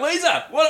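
very high, panicked pleading squeak. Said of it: "So I'm like".

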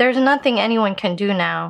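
ordinary talk

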